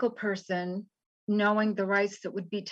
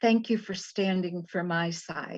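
put-on humble voice. Speaker retells what an altar server said after a presentation; imitating a humble altar server. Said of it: "in his very humble".

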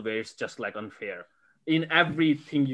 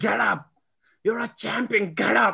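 put-on scream, pitched higher; 9 semitones higher, 4 dB louder than usual. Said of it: "May was just screaming".

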